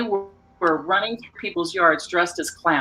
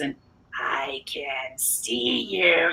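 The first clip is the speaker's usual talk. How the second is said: put-on very slow, low, eerie, creepy voice; 5 semitones lower, 7 dB quieter than usual. Retelling calling through a cracked window at kids during a storm, in a creepy voice. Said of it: "got this really creepy voice".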